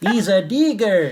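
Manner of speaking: overdone fake Mexican accent. Showing how the quote turned into an outrageous accent: exaggerated stereotypical Mexican accent. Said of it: "our Mexican accent would get worse and worse".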